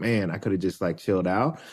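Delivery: ordinary delivery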